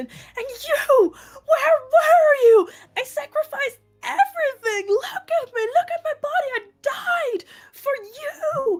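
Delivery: panicked, frantic outburst. Playing a character confronting the rest of the group, freaking out. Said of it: "I'm completely freaking out".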